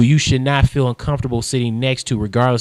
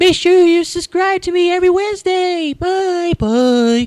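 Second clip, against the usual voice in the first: shrill, very high, mocking put-on voice. Mocking a vlogger's attempt to sound like another vlogger: imitating Nicole's Jenna Marbles voice. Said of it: "the way she sounds like this".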